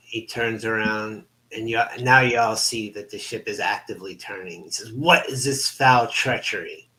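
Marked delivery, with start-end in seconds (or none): 4.9-6.7 roared, bellowing, outraged voice. Voicing a vampire captain whose ship turns against him: bellowing a curse. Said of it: "Garganhale bellows a curse".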